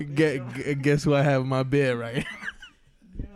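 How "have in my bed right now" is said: normal talking voice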